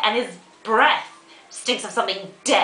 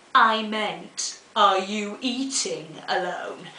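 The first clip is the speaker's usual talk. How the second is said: mock lofty, haughty, supercilious, condescending intoning. Retelling how a waiter leered and intoned at them, mimicking supercilious intoning. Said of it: "in this most supercilious manner, leers at me and intones".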